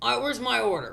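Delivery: mock irate, demanding angry yell. Retelling a customer at the drive-through window yelling at workers; imitating a customer yelling. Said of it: "he's yelling at the workers".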